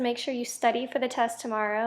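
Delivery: ordinary talk, nothing marked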